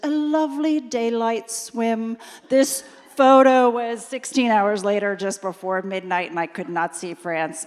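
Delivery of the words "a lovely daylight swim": slight, slow, drawn-out put-on British accent. Retelling what the boat pilot promised before the swim: imitating a british accent. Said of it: "in his little British accent".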